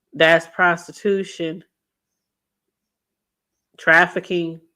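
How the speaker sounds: really slow, deliberate, spelled-out delivery. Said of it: "I gotta say it really slow".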